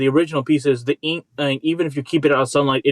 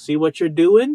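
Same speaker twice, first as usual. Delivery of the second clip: put-on Boston accent; 4 semitones higher, 3 dB louder than usual. Imitating a college teacher scolding about paint: imitating teacher's Boston accent. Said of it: "He had this Boston accent".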